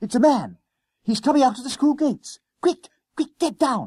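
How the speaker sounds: very high, urgent gasp. A narrator reads a character's line to his companion: gasped. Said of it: "he gasped".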